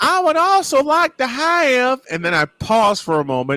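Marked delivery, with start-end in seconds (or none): 0.0-2.0 slow, very high put-on Southern accent. Speaker retelling his drive-through order, in a Southern voice. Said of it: "So I go Southern voice".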